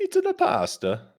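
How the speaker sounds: very high put-on character voice. Repeating the other commentator's line about the courtyard: Luigi impression. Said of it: "Is that a Luigi impression?".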